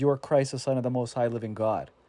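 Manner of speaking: ordinary delivery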